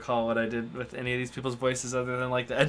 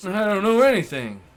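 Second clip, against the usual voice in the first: put-on old man voice, higher and louder; 7 semitones higher, 6 dB louder than usual. Playing a murder suspect answering a detective's questions: old man voice. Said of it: "I just made him sound old".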